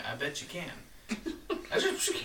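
put-on tipsy, drunk old grandpa voice. Joking about how a word sounds, imitating a drunk grandfather saying it. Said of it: "It sounds like a drunk grandfather saying".

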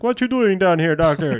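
loud, high-pitched Jamaican accent.

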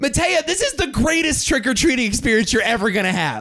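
mock yelling, pitched very high. Recalling trick-or-treating with matea, retelling yelling at her the whole time. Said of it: "I'm just yelling at her the whole time".

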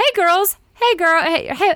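very high, nice, nerdy put-on dad voice. Voicing a friend's nerdy, charming dad greeting the girls: put-on dad voice. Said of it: "I'm trying to, like, play a dad".

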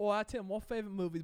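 botched, fake put-on Australian accent. Asked for his favorite movie, [name] answers in a bad Australian accent. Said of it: "I thought you said you were from Australia".

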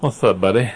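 put-on, fake lisping voice. Greeting the other speaker at the start: put-on lisp. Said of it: "I'm enjoying the lisp that you're developing".

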